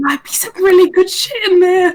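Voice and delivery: whispering in character. Whispering to Penny in character about loot inside: whispering in character. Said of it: "I'll whisper".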